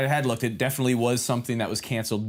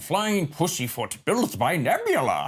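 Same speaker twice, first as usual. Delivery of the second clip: put-on old man voice, slow and swooping; 6 semitones higher than usual. Recalling a line they said in episode 2, in an old man voice. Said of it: "In that old man voice".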